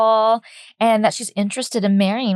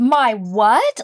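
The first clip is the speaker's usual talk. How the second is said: put-on affronted, indignant, offended tone. Retelling what the queen said about the cup: imitating someone offended. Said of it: "all offended about the cup".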